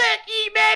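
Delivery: very high squeaky chipmunk voice, voice-changer effect. Streamer describing a voice-changer gag after dunking on someone, in chipmunk voice. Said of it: "change it to chipmunk voice".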